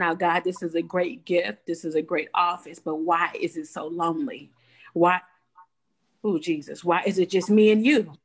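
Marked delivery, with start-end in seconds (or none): none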